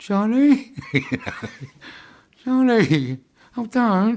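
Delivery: grovelling South London gangster voice, very high, very slow. Retelling calling out from a window while everyone listened, in a south london gangster voice. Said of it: "in my best South London gangster voice".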